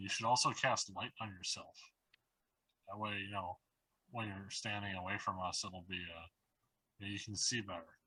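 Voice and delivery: slow, unhurried half-whisper, taking its time. Telling another player's character quietly to cast light on himself: half-whispering. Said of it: "I'm like whispering".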